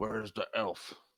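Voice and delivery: guttural, throaty voice pushed from the throat. Narrating a game turn, voicing one of them in a deep guttural voice. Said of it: "says in a deep guttural voice".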